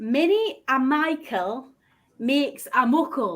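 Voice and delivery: very slow, careful put-on Scottish accent. Saying a phrase for others to guess: attempting scottish accent. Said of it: "I try. I might be any good at it".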